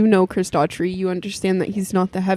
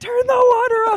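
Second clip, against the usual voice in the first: shrill yell, pitched very high. Retelling what they yelled at the man spraying water: retelling own yell. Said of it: "So then I started yelling at him".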